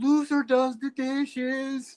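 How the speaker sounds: play-acted very slow, high, drawn-out ringside yell. Imagining yelling into a wrestling ring as a fan: pretend yelling from the crowd. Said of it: "I'm yelling in the ring".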